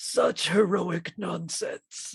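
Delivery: hushed, soft robot villain voice. Retelling a scene where someone begs for mercy, answering in a Megatron impression. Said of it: "I'm gonna try Megatron".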